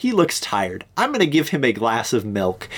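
usual speaking voice

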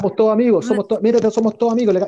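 shouting. Speaker retells shouting while running on a supermarket escalator, retelling a shout. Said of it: "yo gritaba".

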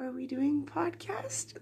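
soft, gentle, quiet voice. Retelling waking a friend for a podcast: imitating her morning voice for Pam. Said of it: "That's my morning pa-, morning talking to Pam voice".

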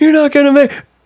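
very high-pitched yell, calling out. Retelling to a friend how onlookers shouted doubt at a rider on a run, imitating people yelling. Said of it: "they're all just like yelling".

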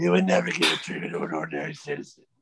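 growling superhero voice. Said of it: "I fucking love his voice".

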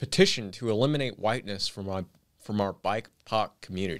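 ordinary talk

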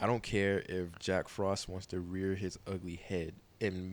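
normal talking voice

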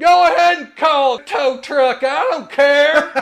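shrill, very loud, high, drawn-out scream. Recounting a man screaming after the speaker, who was walking away: retelling a scream. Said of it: "he screams".

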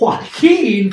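heavy emphasis placed on the word "joaquin". Naming a list pick after being corrected on the name: heavy emphasis on JOAQUIN. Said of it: "you put so much emphasis on it that time".

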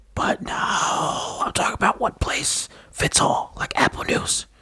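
soft, hushed, under-the-breath whisper. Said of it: "Why are you whispering?".

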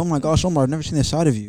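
ordinary delivery

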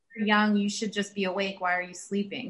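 ordinary talk, nothing marked

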